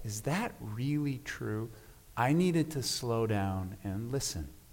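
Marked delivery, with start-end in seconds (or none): 0.0-1.7 very gentle, quiet, soft voice. Speaker recalls a voice he heard questioning him, recalling a very gentle voice. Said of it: "very gentle voice".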